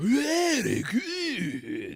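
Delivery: put-on over-the-top, thick, swooping Japanese accent. Describing a favorite Kill Bill scene, quoting Sonny Chiba: caricature Japanese accent. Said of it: "like almost caricature Japanese".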